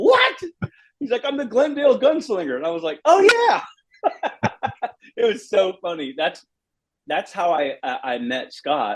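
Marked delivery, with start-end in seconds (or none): 1.3-2.6 very high-pitched California valley surfer-dude voice. Retelling how he met Scott, who talked like a valley surfer: imitating Scott's valley surfer voice. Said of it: "talking like a surfer guy from the valley".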